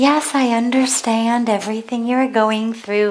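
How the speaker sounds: lilting, sing-song, soothing, placating voice. Imitating parents calming a scared child: imitating a sing-songy voice. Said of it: "that kind of sing-songy".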